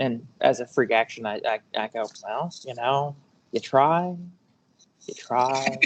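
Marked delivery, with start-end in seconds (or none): 2.2-5.8 disappointed rather than angry. Voicing a character after an enemy's attack fails: disappointed, not angry. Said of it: "He's just disappointed".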